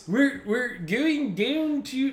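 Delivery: poorly done Baltimore accent. Trying out accents in conversation, in a shitty Baltimore accent. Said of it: "that's just a shitty Baltimore accent I'm doing now".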